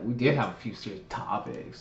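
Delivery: breathy, acted-out, eye-rolling whisper. Repeating the other speaker's line back, imitating an eye-rolling tone. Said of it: "Why you talk rolling your eyes like that?".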